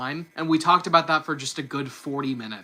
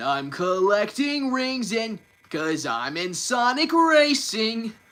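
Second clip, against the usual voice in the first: animated, high, swooping cartoon character voice; 6 semitones higher than usual. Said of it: "my Sonic voice".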